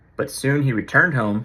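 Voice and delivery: ordinary talk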